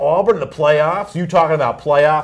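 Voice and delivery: ordinary talk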